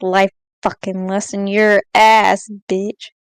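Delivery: very low, very slow under-the-breath mutter. Answering another character's life lesson: muttering under breath. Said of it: "I'll just mutter under my breath".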